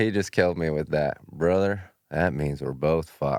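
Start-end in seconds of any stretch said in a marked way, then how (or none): 1.3-3.4 very low, deep rumbling voice. Retelling what Sam Elliott said about their bad ears: low Sam Elliott voice. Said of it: "That's his voice too, that low".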